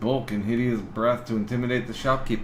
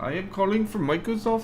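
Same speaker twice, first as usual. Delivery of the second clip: really bad put-on Indian accent, pitched high; 8 semitones higher than usual. Imitating a scam caller claiming to call from microsoft: bad indian accent. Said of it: "that's a really bad Indian accent".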